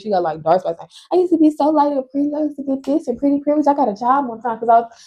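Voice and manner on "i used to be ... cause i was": put-on high, fast, bragging old woman voice, rattled off. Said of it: "my grandma used to always be like".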